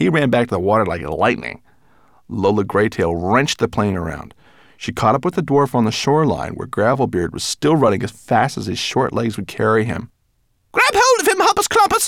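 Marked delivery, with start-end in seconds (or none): 10.7-12.1 shrill, high-pitched, loud shout. Flying low over the shoreline, Lola Greytail shouts to Hoppus Clumpus, shouting. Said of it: "shouted Lola".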